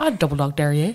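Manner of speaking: Northern Irish accent, low. Speaker repeats a dare to the other speaker in a Derry Girls accent. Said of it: "when you make that accent".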